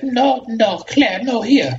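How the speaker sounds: very high, tiny put-on lady voice.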